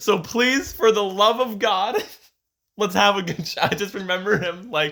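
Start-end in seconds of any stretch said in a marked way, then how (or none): 0.0-3.6 mock, loud, shouted rallying yell. Retelling a show day, the speaker imitates Chris yelling a pep talk to everyone. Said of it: "You're yelling".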